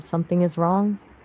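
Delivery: ordinary delivery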